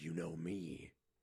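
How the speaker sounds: voice dropped very low and hushed. Retelling a character's weird line delivery, in a Batman voice. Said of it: "went into like a Batman voice".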